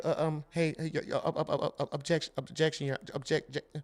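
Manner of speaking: whispered, tripping, cartoonish stutter under the breath. Watching a trial, mocking the man who keeps objecting; Porky Pig stutter.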